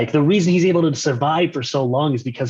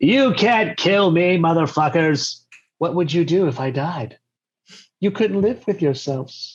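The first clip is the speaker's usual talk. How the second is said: sassy taunting voice, higher; 4 semitones higher than usual. Imagining a charming assassin taunting the party: sassy assassin voice. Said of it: "super, super sassy assassin".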